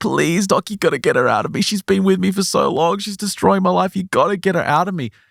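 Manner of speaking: mock desperate pleading. Retelling a patient pleading with the doctor: imitating desperate begging. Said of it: "she's begging for help".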